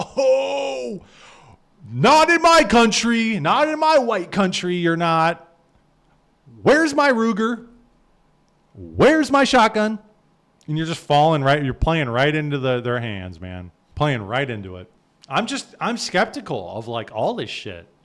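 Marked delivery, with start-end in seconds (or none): 0.0-10.0 loud, slow, high, defiant, indignant American outrage. Mocking the reaction Americans are supposed to have: imitating an angry American. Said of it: "we're supposed to say".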